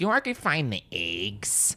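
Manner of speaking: put-on broad Midwest accent, laid on heavy, sing-song. Retelling her best friend talking to a stranger, Bree's Midwest accent. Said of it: "she has the most Midwest accent".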